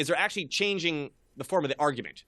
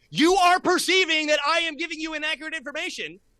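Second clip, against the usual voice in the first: very high, loud, shrill shout; 13 semitones higher, 5 dB louder than usual. After going back and forth, act out how he finally shouted it, retelling a shout. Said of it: "he shouted it".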